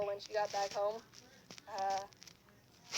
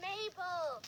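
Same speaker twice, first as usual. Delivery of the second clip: high, mock yell carrying into the distance. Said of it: "some lady was yelling".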